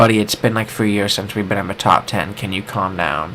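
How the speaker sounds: usual speaking voice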